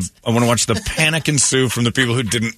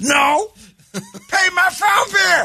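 very high, very slow, sour, angry retort. Retelling a man's reply to an offered coupon: imitating an angry man. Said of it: "this guy's crazy angry at the world".

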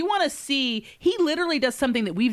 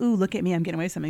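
put-on giddy, sneaky tone, lower pitch; 7 semitones lower than usual. Retelling what a friend said about cheating: imitating a friend's giddy, sneaky tone. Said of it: "told us both giddily one day, like, in the very, like, sneaky".

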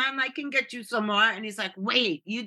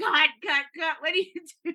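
put-on angry man voice, much higher; 7 semitones higher than usual. Retelling how a man got mad at them for laughing, imitating an angry man. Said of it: "the guy got all mad".

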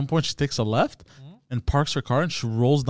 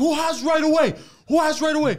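mock very high, shrill, demanding, repeated yelling. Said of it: "while you were yelling?".

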